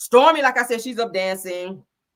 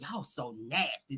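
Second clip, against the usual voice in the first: hushed, very quiet, half-whispered stage whisper; 7 semitones lower, 17 dB quieter than usual. Retelling Stormy's comment on the dancing, imitating a half-whisper. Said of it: "Stormy's whispers".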